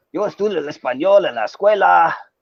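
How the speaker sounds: Mexican Spanish pronunciation. Showing how Spanish sounds in different places, say it in a Mexican Spanish accent. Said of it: "in Mexican Spanish, you would say".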